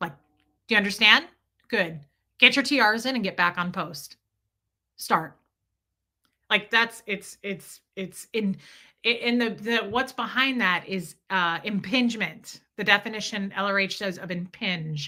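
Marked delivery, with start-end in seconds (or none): 0.7-5.4 mechanical, drilled-in, robotic, commanding delivery. Showing how a Scientologist talks to someone: robotic Scientologist manner. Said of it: "That's how they talk".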